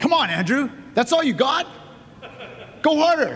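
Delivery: loud yelling.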